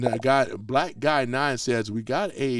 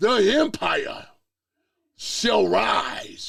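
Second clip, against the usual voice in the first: dramatic, slow, pitched-up theatrical delivery; 8 semitones higher than usual. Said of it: "that sounds so dramatic".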